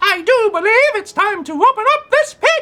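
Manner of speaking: very high, shrill, loud heroic superhero voice. Doing a character voice after the other speaker names it: Beyonce pie character voice. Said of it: "That's my voice for Beyonce pie".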